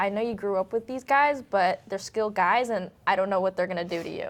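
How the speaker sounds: ordinary talk, nothing marked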